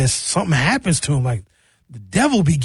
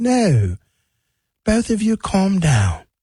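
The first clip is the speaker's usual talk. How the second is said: put-on slow, calming, high-pitched English accent; 6 semitones higher than usual. Recounting a woman breaking up two gentlemen: imitating Bailey Coleman's English accent. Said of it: "She got an English accent".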